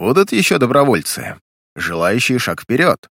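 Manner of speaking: plain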